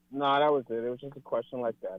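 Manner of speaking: defeated, deflated, dejected tone. Told his request is not going to happen, he replies, sounding defeated. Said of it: "you sounded defeated".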